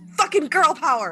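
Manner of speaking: shrill, very loud, high-pitched shout rising upward. Calling up to another character after the machine crumbles: yelling. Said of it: "And I yell up to Bones".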